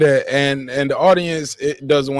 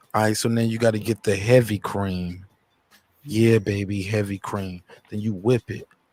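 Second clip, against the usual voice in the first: put-on low, soft, would-be seductive voice; 5 semitones lower, 6 dB quieter than usual. Speaker imitates a man doing recipes in his cooking videos, imitating a sexy voice. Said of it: "he be trying to talk sexy".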